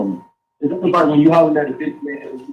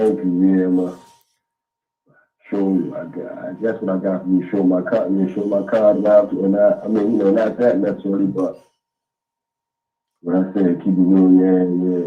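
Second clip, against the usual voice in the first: low-pitched mumbling, muttering; 8 semitones lower than usual. Answering a question on a call-in line: mumbling. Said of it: "You sound like you just mumbling".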